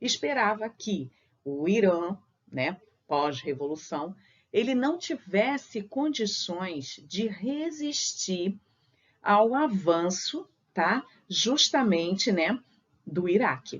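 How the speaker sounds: very slow, drawn-out speech.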